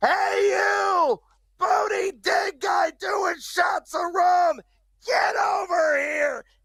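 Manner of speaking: put-on yell. Calling out to someone at the bar: put-on yell at someone. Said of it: "I gotta yell at this jackass".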